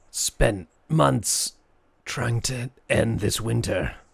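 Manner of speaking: slow, drawn-out skeleton voice. Voicing a reanimated skeleton answering a spell: speaking skeleton voice. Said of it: "he says".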